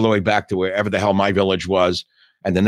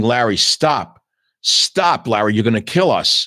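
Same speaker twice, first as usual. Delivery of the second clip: acted, put-on scream, slower; 3 dB louder than usual. Recounting a ride with a speeding driver, yelling at him to stop: retelling a scream. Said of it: "I'm screaming".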